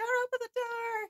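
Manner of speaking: very high, frantic, freaked-out panicked voice. Retelling a film scene where she is freaking out: imitating someone freaking out. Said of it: "freaking out".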